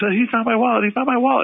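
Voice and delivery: mock, high, repeated yelling. Retelling how you yelled to your friend in the car: retelling a yell. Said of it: "I'm yelling at my friend in the car".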